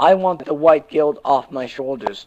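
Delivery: ordinary delivery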